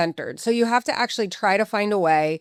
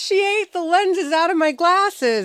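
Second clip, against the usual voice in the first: very high-pitched, laughing through the words; 10 semitones higher than usual. Retelling what someone said on coming inside, imitating someone laughing. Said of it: "he's just laughing".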